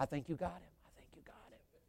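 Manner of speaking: very hushed whisper like a hunting-show narrator. Imitating the narrator of a hunting video: imitating a hunting video whisper. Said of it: "but they keep whispering".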